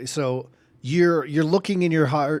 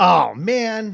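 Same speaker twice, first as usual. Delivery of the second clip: normal talking voice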